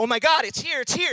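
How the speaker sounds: mock frantic, high, freaked-out voice. Retelling an old movie scene where a man opens the Yellow Pages: imitating someone freaking out. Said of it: "And he starts freaking out".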